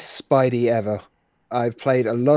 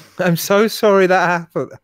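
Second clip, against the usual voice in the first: put-on, insincere, apologetic tone in higher pitch; 7 semitones higher, 5 dB louder than usual. Complaining about the game's voice acting, doing an insincere Lara apology impression. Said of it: "Lara sounds insincere".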